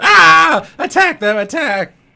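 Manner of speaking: screeching goblin cry, very high, very loud. Game master voicing a goblin as fire flies at it, yelling goblin voice. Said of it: "I love your goblin voice".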